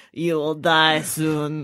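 put-on old French woman's chain-smoker voice. Retelling a comedy special's talking french bulldog: imitating old french woman smoker voice. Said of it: "this old French woman that smoked too many cigarettes".

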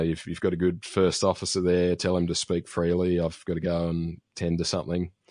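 ordinary delivery

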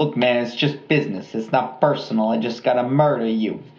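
tough-guy movie mobster accent. Speaker bantering with another speaker, doing a mobster accent. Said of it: "we both do a really great mobster accent".

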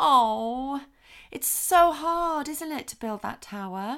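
gentle, soothing, very calm, drawn-out oh. Coming toward a child who finds building a tower hard, very calm. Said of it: "coming towards your child very calmly".

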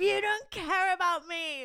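acted, very high, stretched, drawn-out yell. Retelling yelling at her partner during a fight: imitating her own yelling. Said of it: "I just started yelling at him".

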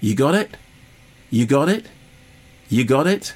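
play-acted smug, self-satisfied needling, repeated. Critiquing a film, the speaker voices it taunting the viewer: mock-smug taunting. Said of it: "smugly, kind of going".

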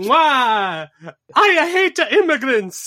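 mock Italian-accented plumber voice. Playing a racist version of Mario. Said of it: "Racist Mario".

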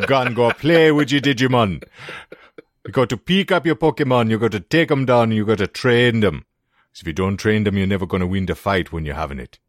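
put-on very heavy, laid-on Jamaican accent. Joking about what something always sounded like to them, heavy Jamaican accent. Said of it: "someone speaking with a very heavy Jamaican accent".

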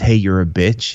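ordinary delivery

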